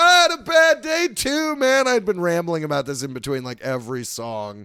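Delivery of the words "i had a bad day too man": booming, shrill, very loud, high, drawn-out yell. Retelling what a guy at the back of the crowd yelled: imitating a heckler yelling. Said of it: "Some guy in the back yells".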